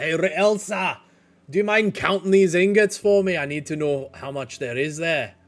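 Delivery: calling out loudly. Voicing a character calling to someone to count ingots: yelling out. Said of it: "he kind of yells out to Elsa".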